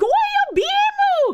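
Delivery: very high, cheerful, chirpy put-on Japanese accent. Imagining an anime-style attack shout, in a Sailor Moon-style fake Japanese accent. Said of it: "in like a really happy Japanese fake accent".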